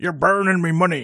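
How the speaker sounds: loud, high, belted cartoon character voice. Asked to do it again, the speaker repeats the cartoon line as a Mr. Krabs impression. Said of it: "That was quite good".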